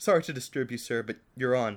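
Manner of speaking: usual speaking voice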